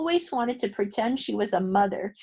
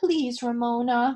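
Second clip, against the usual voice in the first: gentle, cajoling, coaxing tone. Reading a story aloud, an older sister urging a younger girl: coaxing. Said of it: "coaxed Beezus".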